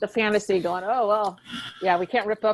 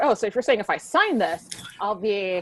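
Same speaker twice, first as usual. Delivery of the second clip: mock strange lawyerly accent. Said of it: "with a weird accent".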